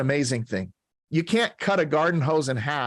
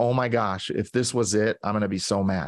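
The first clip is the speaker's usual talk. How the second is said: mock near-tearful voice; 5 semitones lower than usual. Retelling the wife's words after she steps on the scale, imitating someone near tears. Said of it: "she's almost in tears".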